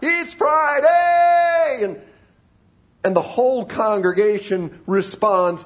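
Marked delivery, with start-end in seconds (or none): 0.0-1.8 mock rousing loud high shout, "Friday" drawn out long. Retelling how a preacher ended his message: imitating someone shouting. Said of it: "he shouts out".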